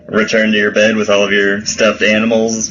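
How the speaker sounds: plain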